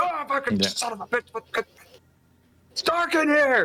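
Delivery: furious yelling, pitched very high. Game narrator voicing Von Penn as he comes upstairs in the dark, Von Penn yelling. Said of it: "you hear Von Penn yelling from the inside".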